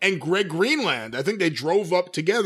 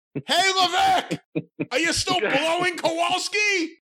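very high, shrill, loud yell; 11 semitones higher than usual. Retelling a fan heckling a wrestler from the crowd: imitating a loud heckle. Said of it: "it's so loud, everyone hears it".

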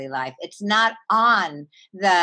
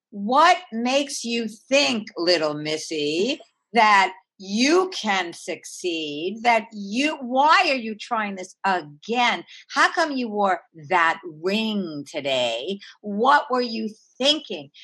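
critical, nagging, scolding voice. Acting out the inner voice that questions us, in a scolding inner voice. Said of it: "it talks to us in this tone of voice".

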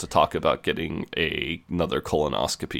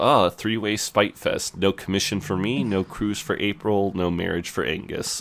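ordinary talk

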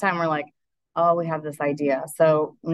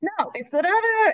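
play-acted shrill, high, stretched-out screaming. Retelling how the doctor's wife reacted to the plumber call: imitating someone screaming. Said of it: "and she's screaming".

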